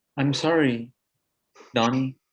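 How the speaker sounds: dejected, mopey, sad delivery. Running a scene, an actor says the apology to donnie, moping. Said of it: "Like you're moping".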